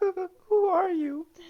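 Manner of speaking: very high, slow, drawn-out sobbing voice. Voicing a frightened sobbing girl who meets a stranger: sobbing while asking. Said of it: "goes back sobbing".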